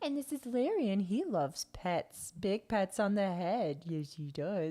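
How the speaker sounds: put-on slow pet-dog voice. Retelling a woman in a video talking for her dog, talking as the dog Larry. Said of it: "she was like talking for the dog".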